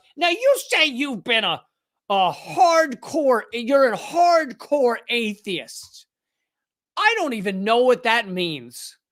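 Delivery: slow condescending tone. Retelling a TV exchange, imitating the host: Joy Behar's condescending tone. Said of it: "in her kinda condescending tone".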